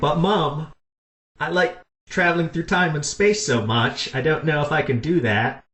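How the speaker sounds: put-on mild Cockney accent. Retelling a scene where Rose answers her mom, Rose impression, Cockney accent. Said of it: "Is that a British accent, sir? ... Cockney accent".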